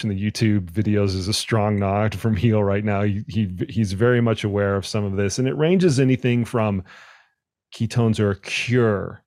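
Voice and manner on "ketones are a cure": "cure" hit hard and singled out. Describing claims that ketones cure overtraining: strong stress on cure. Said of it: "I'm emphasizing that word particularly".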